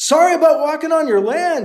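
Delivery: very high, loud, called-out shout. Alibi calls out to an unseen man who just pumped his gun, shouted. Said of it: "he shouted".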